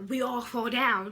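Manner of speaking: sinister, dark devil voice in darkest tone. Retelling how she said the last lyric in the dark: dark, loud devil voice. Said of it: "like a devil voice".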